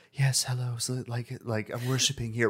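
quirky, whimsical, worshipful, reverent tone. Describing game followers' voices, imitating a whimsical reverent follower. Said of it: "more, like, whimsical in a way".

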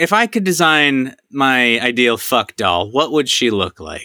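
ordinary talk, nothing marked

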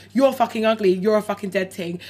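ordinary delivery

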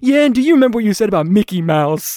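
loud, very stern, severe no-nonsense rebuking tone. Recounting a movie scene, Dennis Quaid's line to Jerry; mock-stern Dennis Quaid line. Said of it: "very sternly says".

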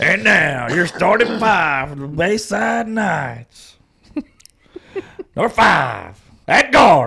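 hyped arena announcer, loud and drawn out. Retelling announcing the home team's starting five: imitating own hyped announcer voice. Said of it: "Did you sound like that?".

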